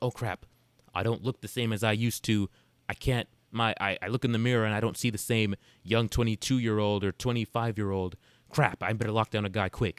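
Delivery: ordinary delivery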